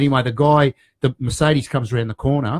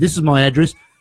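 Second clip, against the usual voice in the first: put-on American accent; 2 semitones higher, 3 dB louder than usual. Retelling a phone call with a supplier: put-on American accent. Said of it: "He said it with that accent".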